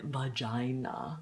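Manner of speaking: every syllable of vagina slowly stretched out. Imitating how a woman said one word, syllables of vagina drawn out. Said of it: "she would say it like elongating each um, syllable".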